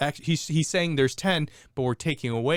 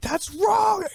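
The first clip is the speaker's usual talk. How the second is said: mock, very high-pitched, angry child's voice; 4 dB louder than usual. Father retelling his daughter objecting to a math video, imitating a mad child. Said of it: "and she's like so mad".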